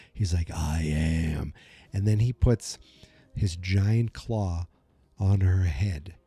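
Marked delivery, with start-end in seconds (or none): 0.5-1.6 creepy put-on villain voice, lower. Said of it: "it's so creepy the way he goes".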